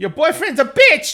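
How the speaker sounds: piercing, very high, loud, squeaky bird squawk. Retelling what a creature called out as it ran away, really squeaky bird voice. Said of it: "in a really squeaky bird voice".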